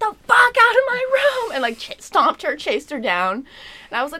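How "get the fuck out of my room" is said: very high, shrill, piercing scream. Retelling how they screamed at her at 3 a.m.: retelling a scream. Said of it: "I screamed".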